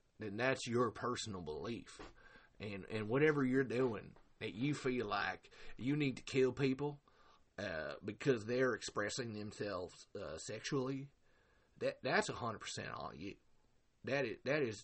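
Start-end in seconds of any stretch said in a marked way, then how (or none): 0.2-13.3 halting, hesitant, stop-start put-on voice full of uh's. Addressing viewers with a respectful disclaimer, doing Bo voice. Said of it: "That's why I'm doing his voice right now".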